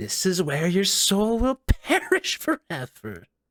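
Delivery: echoey, reverberant voice. Narrating a game scene, voicing a voice heard after a whip crack: echoey voice. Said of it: "a voice kind of echoey say".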